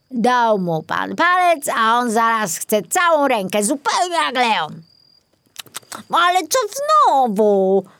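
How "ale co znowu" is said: indignant, outraged, high-pitched, with znowu drawn out. Narrator reads the apple core reacting to Maurycy's protest; indignant. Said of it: "Oburzył się ogryzek".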